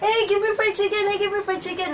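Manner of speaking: high, excited, repeated shouting. Retelling what she shouted to her cousin at her auntie's house, retelling a shout. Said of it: "And then I shouted like".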